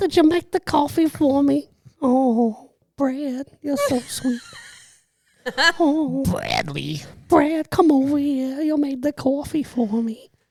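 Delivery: very high-pitched cartoon mom voice. Picturing a man's wife thanking him for coffee, in a Marge Simpson voice. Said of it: "He doesn't like this voice".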